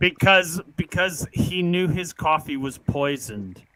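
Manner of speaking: ordinary talk, nothing marked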